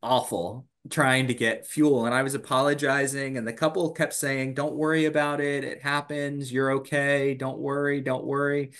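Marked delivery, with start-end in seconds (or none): 4.5-8.7 mock kind reassurance, higher. Retelling a couple reassuring the apologizing speaker, imitating their reassurance. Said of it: "they were so nice and understanding".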